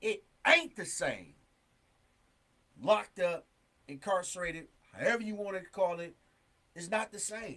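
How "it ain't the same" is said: ain't hit hard and emphasized. Talking about being locked up, with stress on ain't. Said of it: "when I say ain't, I mean I'm putting emphasis on it".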